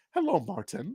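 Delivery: put-on British accent, high. Retelling how Mom spoke when trying to talk proper: imitating Mom's put-on British accent. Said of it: "it become British".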